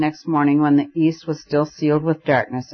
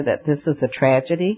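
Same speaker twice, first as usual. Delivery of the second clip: plain reading voice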